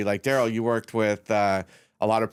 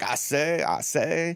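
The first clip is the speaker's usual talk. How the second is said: cartoon rooster voice, much higher; 5 semitones higher than usual. Retelling a partner's speed round of impressions, Foghorn Leghorn voice. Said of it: "give me foghorn leghorn".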